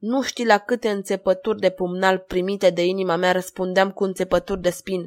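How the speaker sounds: ordinary delivery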